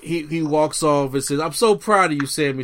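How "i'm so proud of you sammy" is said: mock sarcastic praising tone, higher. Retelling how a wrestler walks off after a handshake: imitating sarcastic praise.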